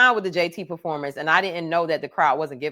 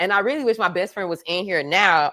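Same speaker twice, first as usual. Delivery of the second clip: usual speaking voice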